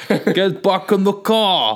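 put-on New York accent. Improvising a bit while the other speaker comments on the voice, weird new york accent. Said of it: "you've gone to a weird New York".

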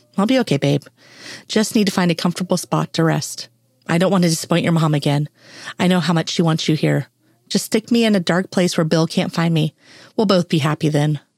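ordinary delivery

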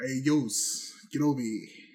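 speaking with New York accent. Riffing on a word with co-hosts, new york accent. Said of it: "Are you using your native New York accent?".

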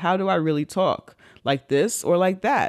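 ordinary talk

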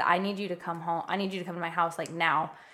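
mock sobbing voice. Speaker retells phoning their mom to come home, retelling a bawling plea. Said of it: "I was just bawling".

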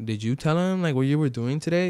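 normal talking voice

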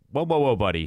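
ordinary talk, nothing marked

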